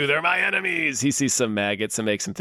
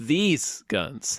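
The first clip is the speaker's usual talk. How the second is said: ordinary delivery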